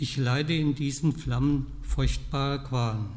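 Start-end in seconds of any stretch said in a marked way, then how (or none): none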